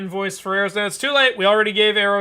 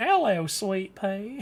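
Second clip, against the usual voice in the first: put-on American southern accent; 6 dB quieter than usual. Voicing a character's greeting while playing: southern accent. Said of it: "Sweet Pea worked way too well with that southern accent".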